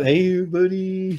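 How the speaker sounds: high, dog-like talking-dog character voice. Recalling a tribute episode, greeting someone in the Cal voice. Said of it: "they did the Cal voice".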